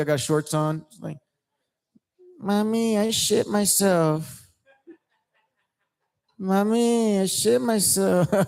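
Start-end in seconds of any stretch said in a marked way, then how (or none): 2.4-8.5 put-on small child voice, very slow, very drawn out. Joking about looking like a little kid in a big shirt: imitating a little kid. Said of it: "I look like a little kid".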